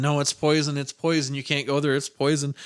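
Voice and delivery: ordinary talk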